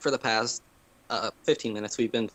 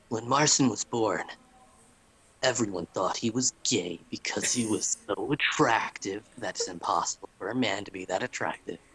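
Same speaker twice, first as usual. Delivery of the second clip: storyteller narration voice. Narrating a mock story about the other speaker for the camera, special narrator voice. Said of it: "my special narrator voice".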